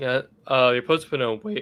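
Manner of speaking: voice breaking and cracking. Answering the other speaker's question, voice cracking. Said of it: "I keep my voice cracked".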